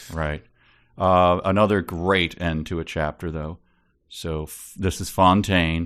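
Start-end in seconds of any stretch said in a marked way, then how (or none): none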